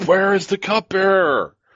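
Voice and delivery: very high, demanding, yelled call-out. Narrating the scene, voice Gemin yelling out to the guard: Gemin yelling out. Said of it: "Gemin yells out".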